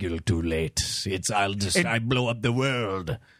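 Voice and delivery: loose put-on Russian accent. Voicing the guy in a real-life Mad Bomber scenario, in a vaguely Russian accent. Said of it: "with like a vaguely Russian accent is just like".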